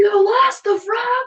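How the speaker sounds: put-on very high, loud, drawn-out shrieking scream. Retelling a sibling's reaction in the car: imitating a scream. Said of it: "Screams to my mom".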